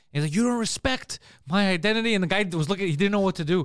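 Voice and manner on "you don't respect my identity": plain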